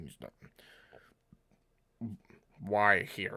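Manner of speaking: loud fishy frog-person creature voice. Voicing a being heard after the flower is eaten, in a fishy frog person voice. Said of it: "Sounds like a fishy frog person would sound speaking common".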